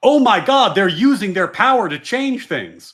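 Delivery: mock, scornful dismay, very slow and drawn out. Imitating the left reacting to the right using power: mocking imitation of alarmed left. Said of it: "And then the left is like".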